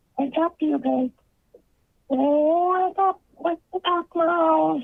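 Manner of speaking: fake high-pitched voice. Repeating what an unclear woman's voice said: man faking a high-pitched voice. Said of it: "sounds like a male voice trying to put on a high pitched voice".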